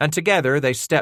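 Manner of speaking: ordinary delivery, nothing marked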